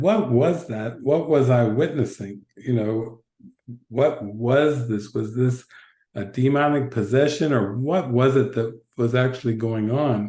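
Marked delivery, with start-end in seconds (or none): none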